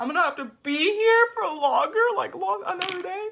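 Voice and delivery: sobbing, very high, very loud crying wail. Retelling being stuck in jail without bail: imitating own crying. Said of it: "fucking crying".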